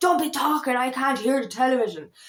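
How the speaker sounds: mock cross, fed-up, angry scolding. Retelling how dad reacted when spoken over: imitating an angry dad. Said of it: "he'd get angry".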